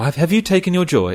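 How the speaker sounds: put-on high, loud, eerie, creepy English accent. Retelling how game characters ask about pills: Village of the Damned creepy English accent. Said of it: "Village of the Damned kind of creepy English accent".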